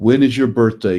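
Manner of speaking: ordinary talk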